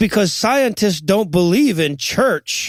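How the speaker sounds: ordinary delivery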